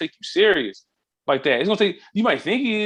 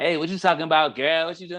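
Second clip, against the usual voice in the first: put-on girlish street slang voice.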